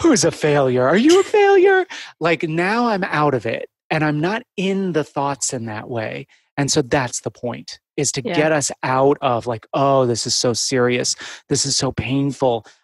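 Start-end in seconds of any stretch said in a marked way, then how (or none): 0.0-1.9 very high, swooping dog-talk voice. Speaker showing how to break out of self-critical thoughts, like talking to a dog. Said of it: "as if you were talking to a dog".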